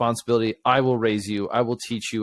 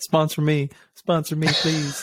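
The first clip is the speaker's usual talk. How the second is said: tongue-in-cheek, facetious fake pleading tone; 4 semitones higher than usual. Joking about wealthy people looking for ministries to support: facetious mock pleading. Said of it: "I'm being facetious".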